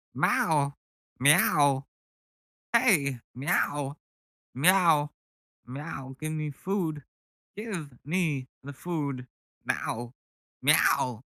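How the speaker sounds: high, halting, odd meowing cat voice. Imagine a cat asking for food, as a cat with Christopher Walken's voice. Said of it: "a cat has Christopher Walken's voice".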